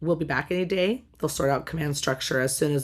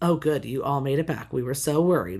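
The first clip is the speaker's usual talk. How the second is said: put-on, dripping sarcasm, delivered much faster. Recounting what he said when the group made it back, retelling with dripping sarcasm. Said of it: "with like dripping sarcasm".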